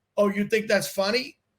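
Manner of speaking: plain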